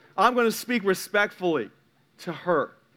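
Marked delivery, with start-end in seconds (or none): none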